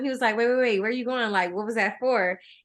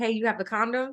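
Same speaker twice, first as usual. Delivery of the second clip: put-on whisper; 4 dB quieter than usual. Retelling asking a guy alone at the bar: imitating own whisper. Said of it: "I whisper in his ear".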